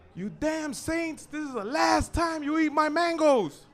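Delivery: high-pitched yelling. Telling a story, the speaker acts out the little priest yelling at the saints: retelling the priest's yell. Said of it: "he's yelling at them".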